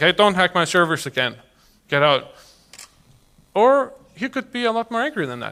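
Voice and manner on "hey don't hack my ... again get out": normal talking voice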